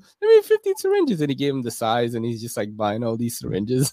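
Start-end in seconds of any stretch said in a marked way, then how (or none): 0.2-1.2 very high, squeaky little put-on voice. Retelling a man asking at Rite Aid for syringes, high-pitched put-on voice. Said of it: "with a high voice and everything too".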